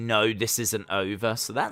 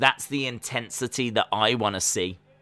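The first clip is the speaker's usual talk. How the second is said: ordinary talk, nothing marked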